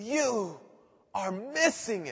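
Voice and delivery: very slow, drawn-out, high scream at top of lungs. Retelling Paul raising his hands at his hearers: imitating Paul screaming. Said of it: "is screaming at the top of his voice".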